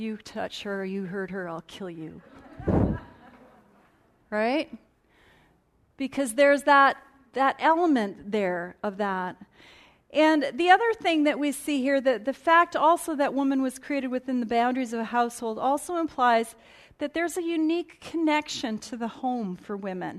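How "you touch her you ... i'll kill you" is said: soft, quiet, spoken under the breath. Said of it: "whispers under his breath".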